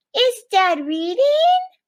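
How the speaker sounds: questioning upward pitch rise on reading. Showing how a question sounds when asked, with rising question intonation. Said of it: "See how my voice goes up like this".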